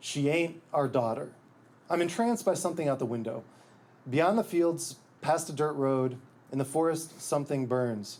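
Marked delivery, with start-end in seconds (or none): none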